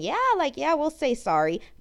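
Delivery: chuckling, insincere, swooping, half-hearted, acted out. Imagining officials apologizing insincerely, imitating a chuckling apology. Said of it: "just chuckling and saying".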